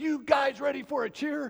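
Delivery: calling out like a shout. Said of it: "he goes".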